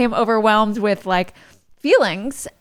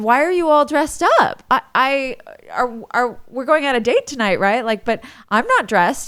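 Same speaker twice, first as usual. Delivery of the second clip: mock confused, puzzled tone, delivered faster. Retelling coming outside to find Ned dressed up, imitating confused questioning. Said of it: "I was really confused".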